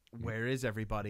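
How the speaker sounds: normal talking voice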